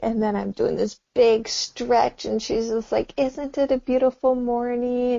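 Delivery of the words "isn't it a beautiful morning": loving, sweet, cheery motherly voice. Imagining a mother waking a child in the morning: imitating mom's sweet wake-up voice. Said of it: "all the beautiful, sweet words".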